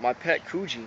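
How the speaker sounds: ordinary talk, nothing marked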